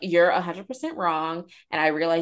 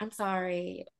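soft, patronizing, condescending, talking-down tone; 9 dB quieter than usual. Complaining about someone's apology, imitating a condescending apology. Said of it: "for her to condescendingly be like".

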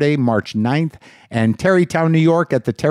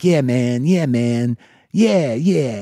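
hip jazz-musician style voice; 2 semitones lower than usual. Speaker imitating a man he was referred to, who talks like a jazz guy. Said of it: "He talks like a jazz guy".

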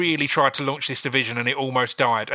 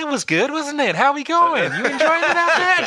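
calm, easygoing, very friendly voice, pitched very high; 4 dB louder than usual. Retelling what a coach says after violent fights: imitating a very calm coach. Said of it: "Just be the nicest, most calm guy in the world".

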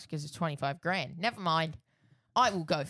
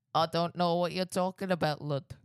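Bolton accent, "lad" said as "lud". Teasing someone who claims only a convincing Bolton accent, in a Bolton accent. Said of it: "What accent was that?".

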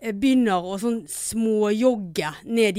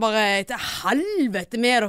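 normal talking voice

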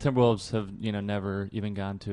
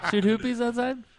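very high, loud, put-on Australian mom voice; 5 dB louder than usual. Speaker repeats what their mom always says, imitating mom's Australian accent. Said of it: "She's Australian".

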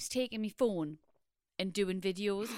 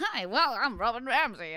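mock child American accent, louder; 2 semitones higher, 4 dB louder than usual. Imitating a child filming vlogs on a phone: imitating a kid's American accent. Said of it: "with this American accent".

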